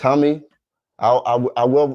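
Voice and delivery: stuttering with repeated false starts over the opening words. Speaker signing off a video, asking viewers for comments, stuttering. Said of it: "I'm stuttering".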